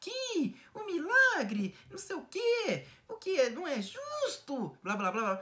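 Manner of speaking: very high, wheedling preacher voice, slow and coaxing. Speaker criticizes Edir Macedo and mimics how he talks; Edir Macedo little voice. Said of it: "Sempre com essa vozinha".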